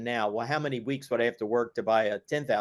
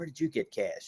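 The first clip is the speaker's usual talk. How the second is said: soft, muttered mumble under the breath; 2 semitones higher, 5 dB quieter than usual. Recounting asking dad for race money while mom overhears; imitating mom's mumble. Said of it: "you can hear mom mumbling".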